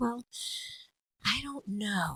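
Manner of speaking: soft, slow in-character breath carrying emotion. Showing how a character breathes within a line: character breath with emotion. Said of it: "there's the actor breath and then there's the character breath".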